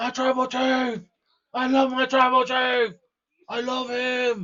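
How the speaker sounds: put-on very high, stretched-out shouting. Retelling what a wrestler said on SmackDown, imitating Jacob Fatu yelling. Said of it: "He was yelling".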